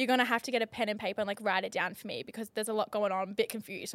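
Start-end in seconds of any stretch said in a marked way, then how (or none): none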